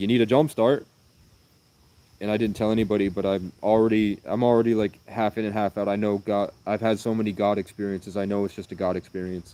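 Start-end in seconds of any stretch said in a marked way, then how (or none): 0.0-0.9 broad, loud Irish brogue laid on thick. Retelling what a stranger asked about the car: imitating a thick Irish accent. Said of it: "thick Irish accent".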